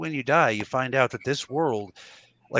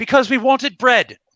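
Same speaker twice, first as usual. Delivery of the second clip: put-on shrill, very high, very loud cockney accent; 11 semitones higher, 10 dB louder than usual. Joking about the Crusades without religion, voicing crusaders in a cockney accent. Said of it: "I like your cockney accent".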